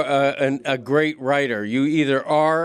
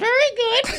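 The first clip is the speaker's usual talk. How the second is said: very high, birdlike parrot call. Speaker comparing being far from the mic to a parrot, parrot voice. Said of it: "it's like when the parrot goes".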